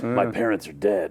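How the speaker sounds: put-on gruff action-hero voice. Keeping up the voice on request: Duke Nukem as Batman voice. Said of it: "Do that voice the rest of the show".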